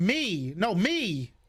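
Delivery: shouting. Answering who the fourth one is: yelling. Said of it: "Stop yelling at me".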